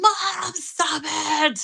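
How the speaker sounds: acted-out, very high, raspy, rough protesting yell. Retelling a daughter yelling at the dancing: imitating daughter yelling. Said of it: "she's yelling".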